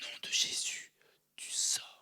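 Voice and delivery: very slow, hushed whisper. Retelling the deliverance he and his wife did at eleven thirty, retelling a whisper. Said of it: "on a fait cette délivrance en chuchotant".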